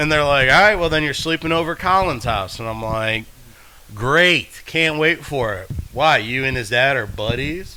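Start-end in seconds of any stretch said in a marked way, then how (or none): 4.0-7.8 sarcastic, put-on enthusiasm meaning the opposite. Recounting own reply after being told to sleep over, retelling a sarcastic remark. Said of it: "it's just all sarcastic comments towards things".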